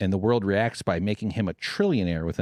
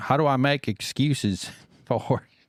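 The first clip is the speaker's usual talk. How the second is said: put-on Southern accent, higher pitch; 5 semitones higher than usual. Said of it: "Why am I giving such a Southern accent?".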